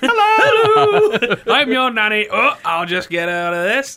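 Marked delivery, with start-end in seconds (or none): 0.0-2.3 high, loud, cheery nanny voice. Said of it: "you got Julie Andrews' face".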